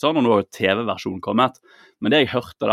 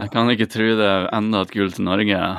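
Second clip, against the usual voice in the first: mock flat monotone, no pitch variation. Imitating someone whose voice has no variation at all, flat monotone delivery. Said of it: "det er ingen variasjon i stemmen. ... Det er helt monotont".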